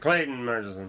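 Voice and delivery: name blurred indistinctly, mumbled and run together. Showing how he says his own name every time, mumbled name. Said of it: "I think I mumble my name every time I say it".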